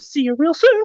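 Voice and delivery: very high, squeaky cartoon mouse voice. Showing how a stream gets closed in the Mickey voice: Mickey Mouse voice. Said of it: "I'll even do it in the Mickey voice".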